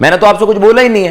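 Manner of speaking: put-on cross, heated, angry tone. Quoting what someone says when they speak angrily, in a mock-angry tone. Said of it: "वो गुस्से में बोलते हैं, इसी टोन में बोलते हैं जैसे मैंने आपको बताया".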